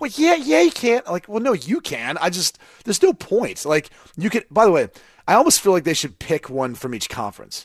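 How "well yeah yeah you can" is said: very high-pitched parroted delivery. Mimicking how the other speaker just said a line: imitating their delivery. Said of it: "it's the way you're saying it. Like, you're going".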